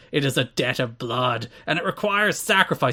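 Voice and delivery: over-dramatic, poetic, theatrical wrestling villain delivery. Performing a wrestling promo he transcribed, for the others: Raven promo impression. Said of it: "Please try and get the the voice".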